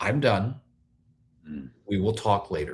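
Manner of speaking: very kind tone. Recalling what the former spouse said whenever the speaker got heated; quoting a very kind tone. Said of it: "she would just very kindly say".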